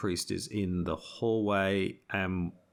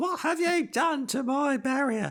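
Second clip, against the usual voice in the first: put-on odd English accent, very high-pitched; 4 dB louder than usual. Narrating a story, the speaker voices a woman with a torch in a weird english accent. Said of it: "I'm using weird English accents".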